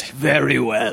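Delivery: badly put-on Russian accent. Playing a captain in a bit with Allison, in Harrison Ford's bad Russian accent. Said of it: "you're really getting his accent".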